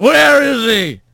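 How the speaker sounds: high, snarling, growling voice. Narrator reads Bobcat just after he rolls upright with a sneeze; snarling. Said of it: "he snarled".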